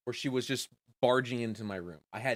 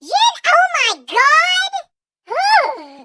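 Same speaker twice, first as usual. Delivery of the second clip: shrill, very high, very loud cry; 18 dB louder than usual. Telling how his mom came through the door, imitating mom's shrill voice. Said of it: "she gets that shrill voice".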